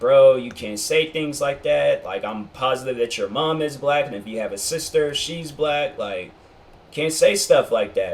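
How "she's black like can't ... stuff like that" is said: ordinary talk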